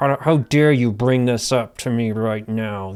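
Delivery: mock-angry, put-on voice through clenched teeth. Speaker retells how a parent reacted to a kid, mock-angry through clenched teeth. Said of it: "it was like through clenched teeth".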